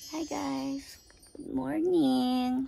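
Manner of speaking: sleepy, fresh-out-of-bed morning voice. Greeting viewers at the start of a morning video, in a just-woke-up voice. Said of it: "Sorry for my just woke up voice".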